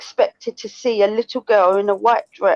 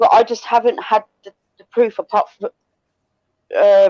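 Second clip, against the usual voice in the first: speaking with a slight stutter. Discussing spirits in conversation: stuttering a bit. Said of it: "I'm stuttering a bit".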